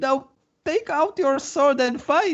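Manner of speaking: very high, indignant, proud, pompous noble voice.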